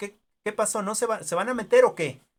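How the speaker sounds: high, loud angry shout.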